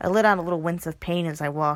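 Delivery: ordinary delivery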